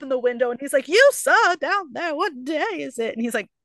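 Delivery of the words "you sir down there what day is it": high, slow, drawn-out mock shout. Retelling a story, calling down to someone from a window: imitating a shout. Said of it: "don't shout at me".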